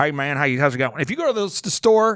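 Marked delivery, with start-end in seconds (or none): 0.0-1.0 local Oklahoman accent, easy drawl. Imitating how people in Oklahoma talk: Oklahoman accent. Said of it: "talk, um, in Oklahoman".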